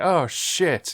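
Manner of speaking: mock, mildly exasperated scolding tone. Retelling a film character watching a man burn: imitating mild scolding tone, like to a cat. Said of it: "the exact feeling I got off that woman saying".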